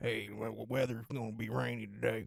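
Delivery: Mississippi newscaster accent. Showing off a new character, a Mississippi newscaster accent. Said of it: "It's a Mississippi newscaster".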